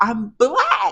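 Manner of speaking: high-pitched, loud yell. Retelling talking to a hard-of-hearing woman, reenacting your own yell. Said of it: "So I'm literally yelling".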